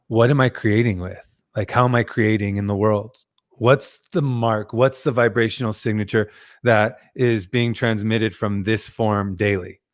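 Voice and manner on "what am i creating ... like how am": plain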